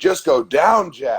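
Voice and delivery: goading, taunting, trash-talking yell. Speaker retells a fighter yelling at his opponent during a fight; retelling a yell. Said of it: "He was yelling at the dude".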